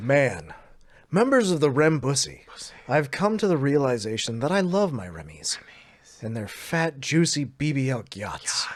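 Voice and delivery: grand, dramatic, swooping theatrical declamation. Reading a text aloud in a dramatic fashion, dramatic, theatrical reading. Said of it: "I will now read it in a dramatic fashion".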